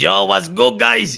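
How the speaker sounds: very high, very loud, raspy put-on character voice. Joking about answering the phone at work: Ramon voice. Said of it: "I couldn't imagine answering the phone like".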